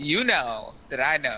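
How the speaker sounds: plain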